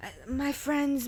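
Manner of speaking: put-on drunk slurring. Retelling a video of a woman pretending to be drunk: imitating drunk slurred speech. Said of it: "slurred words and all this".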